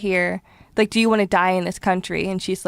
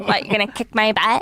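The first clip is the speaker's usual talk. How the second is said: put-on American valley girl accent. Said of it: "American Valley Girl accent".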